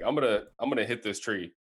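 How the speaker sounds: put-on sarcastic boastful tone. Retelling a golf shot near a tree: imitating own sarcastic boast.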